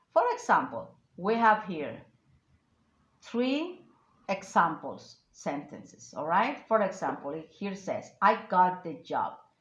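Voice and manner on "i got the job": the word job stressed hard. Showing how emphasis changes an example sentence, stress on job. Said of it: "that's why I emphasize the word job".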